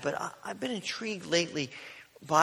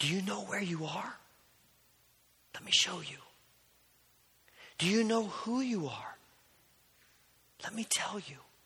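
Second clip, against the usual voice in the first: soft, close whisper, leaning in; 3 semitones higher, 4 dB quieter than usual. Acting out Christ leaning down to a captive's bedside: whispering. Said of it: "leans down into the bed and whispers".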